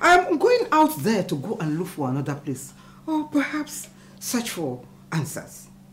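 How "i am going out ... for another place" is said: loud, angry outburst. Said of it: "Why are you sounding like this now".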